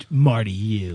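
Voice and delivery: said with disdain. Showing how the name gets said, only as Marty U, said with disdain. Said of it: "Said with disdain".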